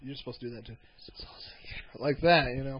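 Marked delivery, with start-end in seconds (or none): 1.2-2.1 very quiet, breathy whispered delivery. Showing the other speaker how the band name should be said, whispery.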